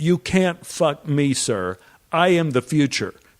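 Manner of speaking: mock yell, flung out. Retelling a scene from a cage in a saloon, yelling back at them: imitating a yell. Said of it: "I yell back at them".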